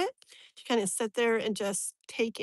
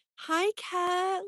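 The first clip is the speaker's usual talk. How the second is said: acted, sweet, protective, caring motherly voice, pitched up; 8 semitones higher than usual. Describing a late mother, the speaker imitates how she talked: imitating a sweet, caring voice. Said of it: "she talks like".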